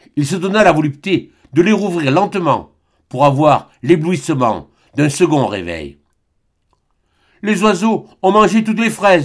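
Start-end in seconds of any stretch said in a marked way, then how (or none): 7.4-9.3 panicked, frantic, alarmed. She comes running up to him with news, panicked. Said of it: "affolée".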